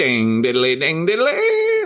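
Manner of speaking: high, swooping, bouncy, goofy cartoon voice. Podcast co-host asked by the other host to do Ned Flanders, Ned Flanders voice. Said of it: "Now do Ned Flanders".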